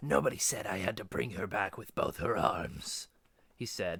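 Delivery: ordinary delivery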